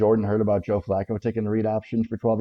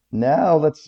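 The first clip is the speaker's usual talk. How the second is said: voice breaking mid-phrase, pitched up and loud; 6 semitones higher, 7 dB louder than usual. A show host moves on to the next part of the show, voice cracking. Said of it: "Wow, voice crack".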